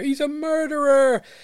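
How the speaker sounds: very high, loud, shrill accusing outcry. Retelling a witness at a trial accusing someone: imitating someone screaming. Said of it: "screams out".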